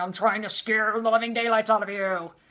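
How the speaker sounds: low guttural demon voice. Retelling how an angry man yelled during photos: low guttural demon voice. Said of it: "I used to call it his demon voice".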